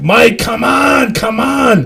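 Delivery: raw, drawn-out high scream. Retelling trying to get a friend up off the road: imitating screaming at someone. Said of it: "I'm screaming at Mike".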